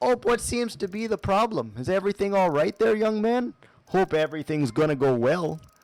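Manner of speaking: put-on speaking with Wisconsin accent. Speaker imitates how gentle, straight-to-the-point locals talk; Wisconsin accent. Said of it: "the Wisconsin accent".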